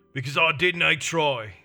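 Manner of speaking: growling voice. Narrator reading Dunn's answer to the Witcher, growled. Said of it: "growled Dunn".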